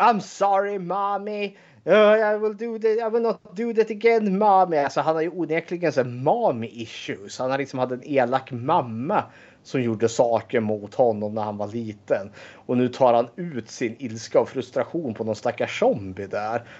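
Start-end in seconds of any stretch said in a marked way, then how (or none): 0.0-4.8 mock, high-pitched screamed-out outburst. Retelling what a character on a recording screams at a zombie: imitating someone screaming. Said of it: "han står ju där och skriker".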